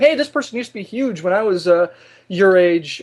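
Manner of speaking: plain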